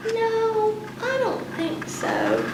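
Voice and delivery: high, soft, weak, half-hearted, unconvincing delivery.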